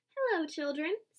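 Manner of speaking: sweetly spoken in a sweet voice. A teacher greets her discouraged class on returning, in a sweet voice. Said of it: "someone said in a sweet voice".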